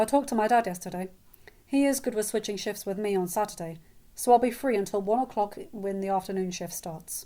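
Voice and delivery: plain reading voice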